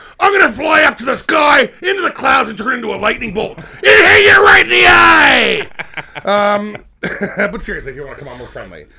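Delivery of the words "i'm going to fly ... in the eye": high, loud, aggressive wrestling-promo style shout. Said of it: "it's not so aggressive all the time".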